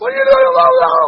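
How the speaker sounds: very loud, high, shrill, in-your-face yelling. Retelling yelling at a five-year-old who punched his brother: imitating own yelling. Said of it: "I'm yelling at him".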